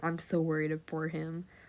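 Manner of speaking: ordinary talk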